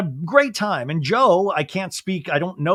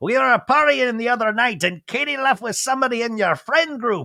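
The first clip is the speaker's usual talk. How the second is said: horrible fake Australian accent, pitched high; 5 semitones higher than usual. Recapping a show scene, the speaker quotes Brock in a horrible Australian accent. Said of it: "you do a horrible Australian accent".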